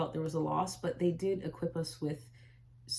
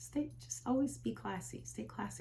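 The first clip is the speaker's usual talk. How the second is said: very quiet, hushed voice; 5 semitones higher, 6 dB quieter than usual. Quoting what her mom always told her, in a very quiet voice. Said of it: "she always say in a very quiet voice".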